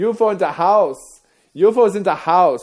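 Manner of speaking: very high, loud put-on German accent. Describing a trip to Berlin, imitating how people speak there, in a German accent impression. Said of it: "they speak speak like this".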